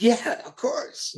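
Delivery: high, amused voice, laughing through the words. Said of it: "Dave's laughing".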